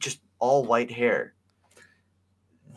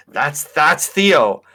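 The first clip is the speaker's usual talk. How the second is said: slow, loud, pretend tone of recognition. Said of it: "look up these characters and be like".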